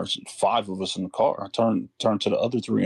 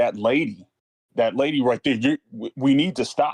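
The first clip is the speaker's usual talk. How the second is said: put-on higher-pitched yelling shout; 3 semitones higher than usual. Retelling urging friends to stop the car: retelling own yelling. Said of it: "yelling at this point".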